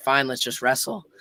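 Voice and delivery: ordinary talk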